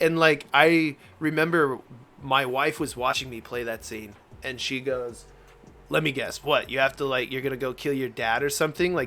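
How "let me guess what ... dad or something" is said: mock dry, very sarcastic, knowing tone. Retelling what his wife said while watching him play: imitating a sarcastic tone. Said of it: "very sarcastically".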